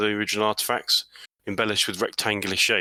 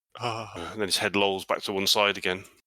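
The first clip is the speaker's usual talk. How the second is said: ordinary talk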